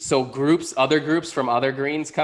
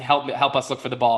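normal talking voice

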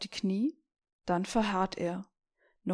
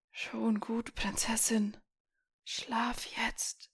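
soft, hoarse, rasping voice; 6 dB quieter than usual. Narrator voices a stranger answering the girl in her father's place: strange hoarse voice. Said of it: "heisere Stimme antwortet an seiner Statt".

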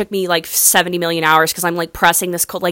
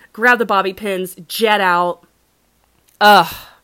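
ordinary talk

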